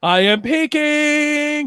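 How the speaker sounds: blasting very loud, very high, peaking voice. Showing the audio levels peaking, very loud, peaking the levels. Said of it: "this is me peaking".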